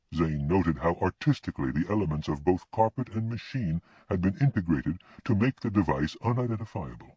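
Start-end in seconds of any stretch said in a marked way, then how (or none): none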